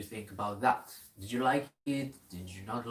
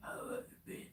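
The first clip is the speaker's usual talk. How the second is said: put-on deep, breathy horror-movie voice. Greeting another speaker as a joke: put-on deep horror voice. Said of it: "deep voice".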